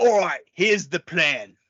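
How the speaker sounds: put-on gravelly British voice. Imitating a movie character's plan line: gravelly british voice. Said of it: "super gravelly British voices".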